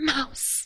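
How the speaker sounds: high, soft under-the-breath murmur. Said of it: "under his breath".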